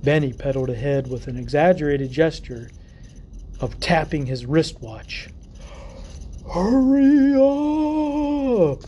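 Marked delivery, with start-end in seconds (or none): 6.5-8.8 high, loud ghostly moan. Narrator reading Benny urging Jack to hurry as he pedals ahead, in a moaning Halloween ghost voice. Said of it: "he moaned in a Halloween ghost voice".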